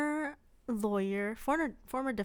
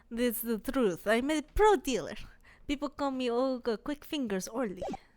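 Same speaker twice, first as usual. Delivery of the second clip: put-on Russian accent. Playing the character Olga Orly, introducing herself in a Russian accent. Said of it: "how do you do the Russian accent again?".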